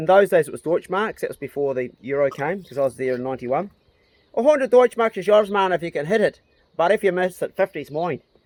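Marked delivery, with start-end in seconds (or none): 4.3-8.2 put-on heavy Dublin accent, pitched up. Retelling what a man said to the speaker, in a strong Dublin accent. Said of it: "really like strong Dublin accent".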